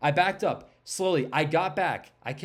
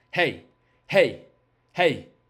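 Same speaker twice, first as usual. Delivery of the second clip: moderate calling out, gradually getting a little louder; 3 semitones lower, 5 dB louder than usual. Retelling calling out after it went behind a rock, calls growing louder. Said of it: "progressively getting a little louder as well".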